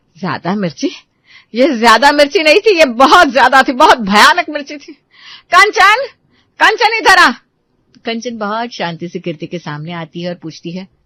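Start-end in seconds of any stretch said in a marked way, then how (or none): 0.2-7.3 angry, raised, rising hot-tempered outburst. Narrator reads a character's line after she drinks all the water: angry. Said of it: "गुस्से में बोलती है".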